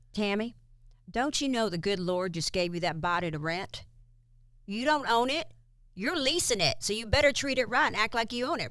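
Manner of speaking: put-on Kentucky-accented voice. Retell your dad's answer to your question just like he would say it, imitating a dad from Kentucky. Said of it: "he's from Kentucky, so I'm going to say it just like my dad would say it".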